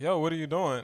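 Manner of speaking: ordinary talk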